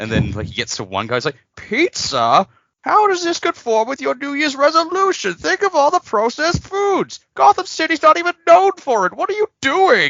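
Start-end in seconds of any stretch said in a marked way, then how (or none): 1.5-10.1 loud, very high-pitched character voice. Retelling a YouTube dub of Bane reading lunch orders: Bane voice. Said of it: "someone doing an impression of his voice".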